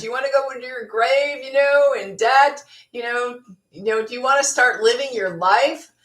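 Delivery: put-on accent of the American South. Quoting what a lady said to people: southern accent. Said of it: "she says it with a southern accent".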